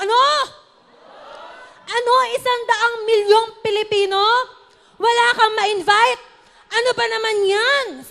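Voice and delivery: booming, scolding preacher's tone. Tell listeners what Pastor Rafi said so they imagine his voice, as a Pastor Rafi impression. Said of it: "Na-imagine niyo po ba yung boses ni Pastor Rafi?".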